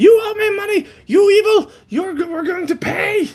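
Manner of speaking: very high, frantic, furious shrieking rant. Retelling a scene where the Ravkin freaks out at him, Ravkin's mock shriek. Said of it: "the Ravkin is just shrieking at him".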